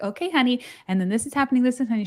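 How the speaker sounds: play-acted, creepily calm voice. Retelling how a nurse on the first unit handed over reports: imitating a nurse's creepy calm tone. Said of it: "who would very creepily".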